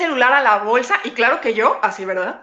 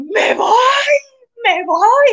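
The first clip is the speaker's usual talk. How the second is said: acted-out sobbing cry, very high-pitched wailing; 12 semitones higher, 4 dB louder than usual. Retelling talking to her mom, the speaker imitates her own crying. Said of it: "me senté llorando".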